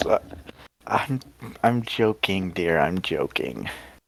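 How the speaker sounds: soft, slow speech with light chuckle underneath. Voicing a character who says he is only joking: chuckling while talking. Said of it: "He kinda chuckles a little bit".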